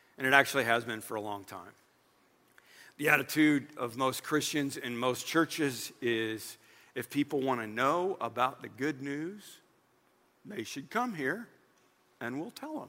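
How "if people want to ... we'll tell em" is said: slightly mocking and sarcastic, lower and quieter. Describing the attitude of most churches: a little sarcastic. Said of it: "I'm being a little sarcastic".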